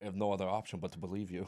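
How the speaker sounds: put-on Austrian accent. Acting out a bar pickup scene: Arnold Schwarzenegger voice. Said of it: "that was, like, Arnold Schwarzenegger".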